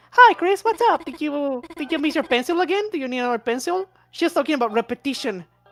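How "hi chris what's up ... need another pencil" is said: bright, friendly, cheerful, high, sunny character voice. Quoting a game character's first line, doing Noel's voice. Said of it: "let me do the voice".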